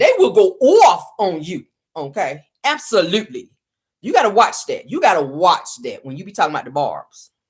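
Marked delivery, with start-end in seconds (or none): 0.0-1.6 put-on New York accent with swooping pitch. Warning listeners about a fan base, the speaker switches into a New York accent. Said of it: "let me get my New York accent".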